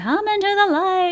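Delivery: put-on mild, high, half-screamed call. Retelling a film character's line to another speaker: imitating Zelda screaming. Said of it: "she's screaming".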